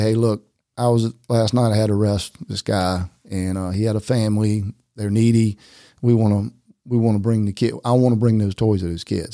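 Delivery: ordinary talk, nothing marked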